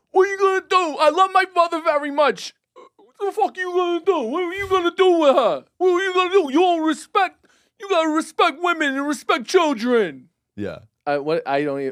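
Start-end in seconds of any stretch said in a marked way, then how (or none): 0.2-10.3 put-on loud, high-pitched, burly Italian accent. Recalling what a burly Italian guy said to him, burly Italian guy accent. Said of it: "remember hearing the accent come on".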